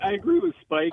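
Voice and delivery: voice cracking and jumping high mid-line. Agreeing with another speaker in a group conversation, voice cracking. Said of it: "Nice voice crack".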